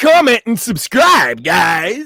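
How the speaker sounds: very loud radio announcer voice. Closing a podcast plea for listener support, in a radio guy voice. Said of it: "had to bust my radio go- guy voice out".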